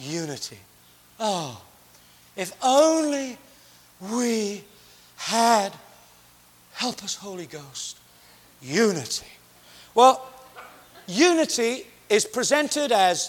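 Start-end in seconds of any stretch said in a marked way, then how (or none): 0.0-9.3 gloomy, mournful, despairing tone. Making a pastoral point, the speaker mimics talk of unity in a mock down-in-the-mouth tone. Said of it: "down in the mouth kind of tone".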